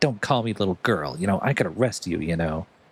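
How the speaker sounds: mock tough, intimidating voice. Retelling a game scene where a character acts tough: imitating acting all intimidating. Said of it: "she's trying to act, like, all intimidating".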